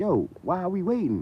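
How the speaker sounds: acted irritated, impatient, high-pitched and fuming. Retelling waiting hours for a steak: retelling own fuming complaint. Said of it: "I'm fuming 'cause I'm like".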